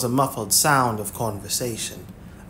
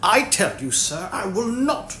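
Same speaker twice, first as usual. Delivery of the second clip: high, swooping voice rising as it goes; 8 semitones higher than usual. A man refusing in an overheard conversation, voice rising. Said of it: "his voice rising".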